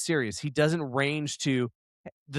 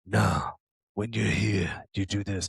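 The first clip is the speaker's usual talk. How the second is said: very low, deep, serious monotone; 7 semitones lower than usual. Mocking an actor as one-note: Vin Diesel impression, serious low voice. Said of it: "Vin Diesel is the same serious, low voice".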